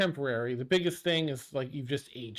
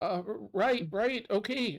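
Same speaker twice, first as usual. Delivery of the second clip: anxious, unsettled, high, nervous stuttering voice; 8 semitones higher than usual. Voicing a cleric reacting to Zia insisting on going on: nervous. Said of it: "he's a little nervous".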